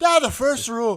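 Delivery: put-on high, loud voice in an Irish accent. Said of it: "And I'm like".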